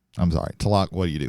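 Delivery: ordinary talk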